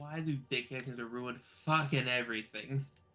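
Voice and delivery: with a heavy sigh. Voicing a character taking one last look around: sighing heavily. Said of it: "just sighs heavily".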